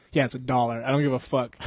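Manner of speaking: ordinary delivery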